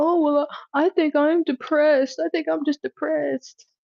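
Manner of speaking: pitched way up, tearful, weepy, blubbering crying voice. Mocking someone who keeps crying, imitating someone crying. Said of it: "What you keep crying for?".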